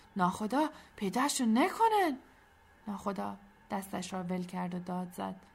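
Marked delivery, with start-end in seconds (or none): 0.2-2.2 frightened, fearful, high and swooping. As the patrol approaches, a man speaks to the captain, fearful. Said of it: "با ترس گفت".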